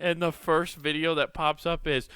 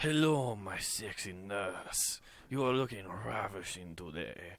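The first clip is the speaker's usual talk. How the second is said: put-on, laid-on Spanish accent; 9 semitones lower, 12 dB quieter than usual. Joking about people waking up in character, greeting a nurse in Puss in Boots Spanish accent. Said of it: "When you wake up and you have a Spanish one".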